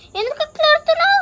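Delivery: high-pitched, worried, coaxing voice.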